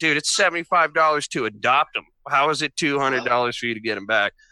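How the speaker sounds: ordinary delivery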